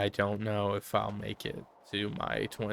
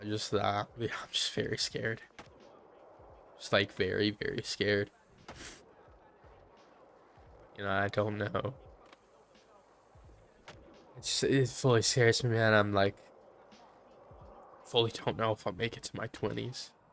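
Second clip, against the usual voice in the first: teary, tearful, close to crying. Speaker admitting he is very scared, tearing up. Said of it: "I'm tearing up a little bit here".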